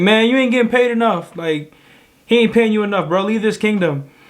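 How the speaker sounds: yelling at a high pitch. Speaker voices the devil yelling from outside the gate; mock yelling as the devil. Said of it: "He's just yelling".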